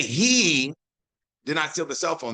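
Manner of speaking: strong stress on he, rest plain. Showing how stress changes a sentence's meaning: stress on the word he. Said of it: "that implies that somebody else did. Because the where I put that he".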